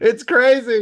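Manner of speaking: high, loud, excited, thrilled squeal.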